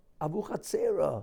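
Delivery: called out loud, not belted. Recalling arriving among shouting men, one of them screams out; retelling a scream. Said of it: "one of them screams out".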